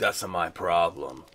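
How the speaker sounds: low soft tough-soldier voice.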